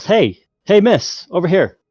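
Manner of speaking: high, loud calling yell. Voicing a stall owner calling out to a customer: yelling. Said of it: "owners actually yells".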